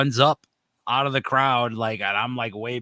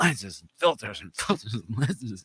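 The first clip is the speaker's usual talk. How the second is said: intoxicated speech, words circling in a stuck loop; 4 dB quieter than usual. Retelling what a kid at a festival kept saying: imitating a kid high on Molly. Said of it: "He just kept repeating it over and over".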